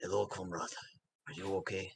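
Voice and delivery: whispered, in a put-on voice. Playing a character who greets a dwarf: whispering in character. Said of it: "I'm going to whisper in Dwarvish".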